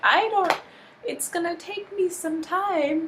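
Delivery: hesitant, high-pitched voice. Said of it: "Even Uhura's like".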